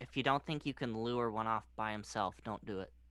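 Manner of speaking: speaking in a whisper. Warning a fellow player not to try luring a soldier: whispering. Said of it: "I'm gonna whisper".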